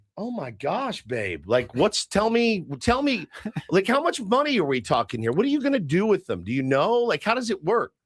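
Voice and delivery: eager, keen, curious tone. Imitating a partner asking how much money: imitating wife asking eagerly. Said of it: "I want her to come in and say".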